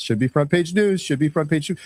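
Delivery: plain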